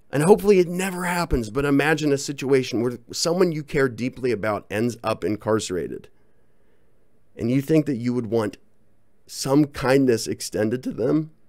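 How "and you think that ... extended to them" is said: breaking, catching, cracking voice, choking up. Speaker addressing listeners: voice cracking. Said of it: "That was a weird voice crack".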